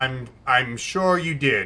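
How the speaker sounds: slow, deadpan, no-reaction delivery. Answering a zinger in character after a willpower roll: deadpan. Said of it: "I'm just deadpan".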